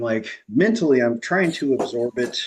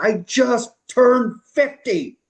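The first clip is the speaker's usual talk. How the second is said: mock shout, very high, long-held and drawn-out; 12 semitones higher, 4 dB louder than usual. Retelling a phone call with a caller, imitating own shout. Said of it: "And I shouted".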